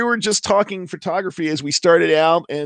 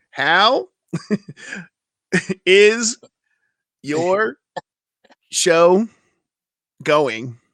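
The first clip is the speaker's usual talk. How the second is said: very slow, halting, word-by-word spacing. Repeating a question over a choppy call connection: really slow. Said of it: "let's see if I can do it really slow".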